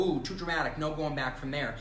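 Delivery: ordinary talk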